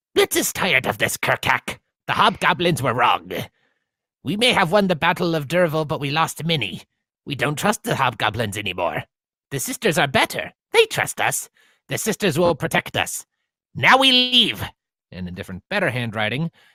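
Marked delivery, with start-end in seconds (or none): 0.2-14.7 generic fantasy goblin voice, high and swooping. Reading a note aloud at the game, generic goblin voice. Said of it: "going in just kind of a generic goblin voice".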